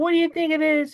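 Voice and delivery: squeaky, very high-pitched reporter voice. Retelling a press conference, quoting a reporter in a squeaky voice. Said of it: "this reporter with this squeaky voice is like".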